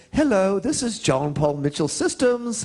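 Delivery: put-on British accent. Retelling a friend from england's answering machine greeting, in a british accent. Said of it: "in her British accent".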